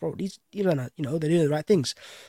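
ordinary delivery

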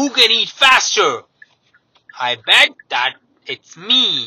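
high, loud gleeful shout. At supper, Pig calls out to Trevor: gleeful shout. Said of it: "Pig shouted with glee".

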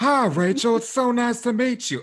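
put-on loud, high-pitched cartoon boy voice. Chatting about the hill people, the speaker does a Bobby Hill voice. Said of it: "He talks like this".

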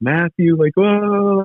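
put-on loud sobbing. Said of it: "she starts crying again, super loud".

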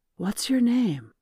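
hushed whisper. Gaia crawls toward a terrified young girl, whispering. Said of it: "Gaia whispered as she crawled towards the child".

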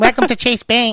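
put-on female voice. Retelling how a bank worker greeted customers, imitating the bank lady's voice. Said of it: "she had a voice like this".

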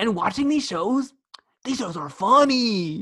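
put-on high, slow anime-kid voice.

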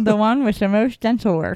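speech distorted as with a retainer. Quoting an insurance commercial line: retainer voice. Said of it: "people talking with a retainer voice".

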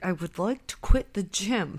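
forced through gritted teeth. Retelling a scene where a friend urges him on as he tries again, Chandler through gritted teeth. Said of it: "a through gritted teeth".

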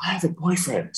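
soft, high, hushed stage whisper. Recalling what a man at the last show said, retelling a half-whisper. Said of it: "and he whispers".

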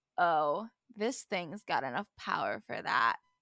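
creepy put-on seductive, weirdly sexual suggestive tone. Retelling a character's line from an episode: imitating a weirdly sexual tone. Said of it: "In a very weirdly sexual tone".

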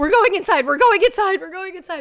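mock scared panic, shrill, loud, high, urgent. Retelling hurrying the dog inside: imitating a terrified voice. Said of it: "I was terrified".

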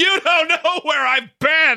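mock yell, very high-pitched, slow and drawn out. Retelling a scene from Fight Club, imitating Brad Pitt yelling. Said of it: "when he's yelling at that guy going".

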